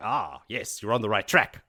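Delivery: ordinary delivery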